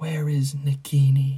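icy, hard voice. Reading a story aloud, voicing a man who asks a question: cold voice. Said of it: "said the cold voice".

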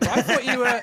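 loud, high laughing and teasing.

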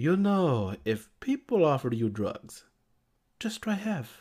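put-on heavy, laid-on Spanish accent. Quoting an older friend's advice, in the friend's thick Spanish accent. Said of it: "the thickest uh, Spanish accent he's like".

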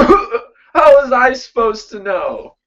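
speech broken up by coughing. Talking back to a voice in the head while in character: coughing while speaking. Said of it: "as I'm, like, coughing and stuff".

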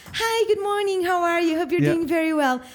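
bright polite phone voice. Showing how one sounds on the phone: imitating own higher-pitched phone voice. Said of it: "e a minha sobe".

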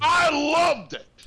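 booming, very loud, high, enthusiastic delivery. Asked for an overall impression of the module, answering in a loud tone. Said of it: "you loved it with such a loud tone".

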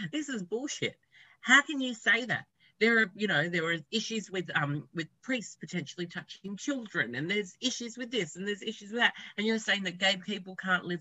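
heated, high-pitched shouting. Recounting how someone yelled at a teacher, the speaker retells angry yelling. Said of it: "he just started yelling at the teacher".

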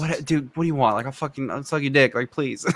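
desperate, pleading, begging tone. Retelling how the character begs once the God talk fails: imitating Jeremiah pleading. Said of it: "pleading with him".

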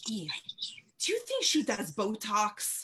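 hushed, quiet whisper. Retelling what the visitor asked privately: imitating someone whispering. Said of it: "she whispers in my ear".

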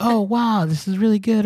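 delighted Australian accent, high, loud gushing.

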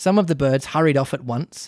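ordinary delivery, nothing marked

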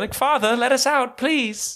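odd put-on British accent, very high and slow. Imagining a rich man's kids locked in his basement, in a weirdly British accent. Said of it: "they're like weirdly British for some reason".

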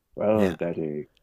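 urbane, suave, debonair voice. Describing a radio character's voice, then imitating it: suave Valentine Dyall style. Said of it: "Sellers' voice is a suave Valentine Dyall style".

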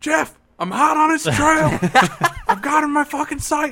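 shrill, very loud, high shouting. Telling a story about chasing someone, the speaker re-enacts yelling into the microphone: retelling yelling into microphone. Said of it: "I'm yelling into the microphone".

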